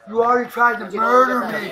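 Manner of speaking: panicked, loud, desperate pleading voice.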